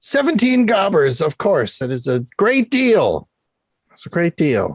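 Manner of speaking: half-shouted, mild yell. Playing a seller naming the price to a buyer, yelling. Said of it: "Why are you yelling?".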